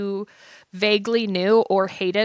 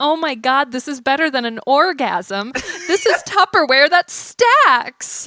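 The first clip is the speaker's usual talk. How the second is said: super happy, over-the-moon gushing rave; 4 semitones higher, 4 dB louder than usual. Spoofing an infomercial customer, imitating someone super happy. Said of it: "just somebody like super happy".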